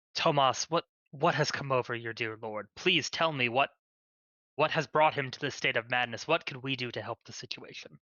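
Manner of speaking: gentle, soothing, reassuring leader-like voice. A player voices Brother Ward addressing Tomas, in a gentle, calming, reassuring voice. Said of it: "in a gentle, calming, reassuring voice of a of a leader".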